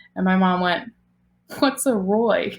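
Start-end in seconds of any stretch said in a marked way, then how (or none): 1.5-2.5 put-on sarcastic tone. Retelling what mom said on first hearing of a dog: imitating mom's sarcastic tone.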